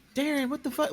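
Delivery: very high, irritated, annoyed outburst. Acting out a future wife who is annoyed at Darren: imitating an annoyed wife. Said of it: "if your future wife is like".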